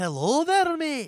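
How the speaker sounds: fake accent slipping into Scottish. Trying out accents, another speaker notes it slips: put-on accent slipping into Scottish. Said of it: "You're watching way too much Lemmy".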